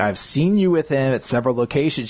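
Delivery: normal talking voice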